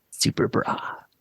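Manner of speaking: muttered under the breath. Voicing a character smiling into a closet after others leave: muttered under the breath. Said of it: "Under my breath".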